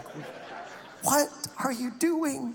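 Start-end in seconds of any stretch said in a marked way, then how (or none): 1.0-2.5 high-pitched, slow, stretched-out, hushed, incredulous voice. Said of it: "shot her a look like".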